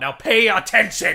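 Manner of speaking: very loud, frightening, scary shout. Reading a character's line and ordering the other to focus: scary outburst. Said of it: "You're scaring me".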